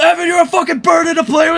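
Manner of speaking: acted-out high, furious, angry yell. Reminding the listener what they yelled at Evan, retelling an angry yell. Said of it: "just yelled".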